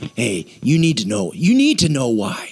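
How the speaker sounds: icky, creeping, low, insidious needling voice. Acting out a nagging inner voice, icky insidious voice. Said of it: "anyone ever heard that icky voice before".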